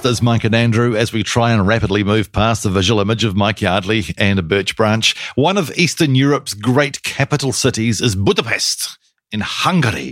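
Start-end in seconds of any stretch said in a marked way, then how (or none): 5.4-10.1 bad put-on Hungarian accent. Show co-host introducing a new city, bad put-on accent. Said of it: "that was a bad accent too".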